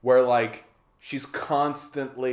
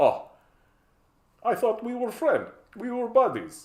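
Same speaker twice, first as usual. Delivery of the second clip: bad put-on Russian accent, very high, swooping; 9 semitones higher than usual. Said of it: "I don't know why I'm using that accent".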